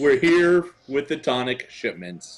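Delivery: very clear delivery, each word spoken distinctly. Answering the armored man who demanded their business, very loud and clear. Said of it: "I say this very loudly and very clearly".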